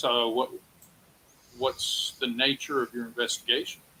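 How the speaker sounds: put-on grave, solemn, very serious tone. Voicing a doctor asking investigators about their investigation: very serious. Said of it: "he gets very serious".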